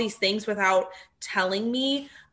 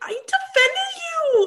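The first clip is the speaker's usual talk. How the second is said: very high-pitched, shrill, frantic screaming. Retelling a fight in a restaurant, Sheena's screaming voice. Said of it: "yelling in her like screaming kind of voice".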